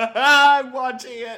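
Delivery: high, loud, laughing through the words. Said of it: "I'm dying".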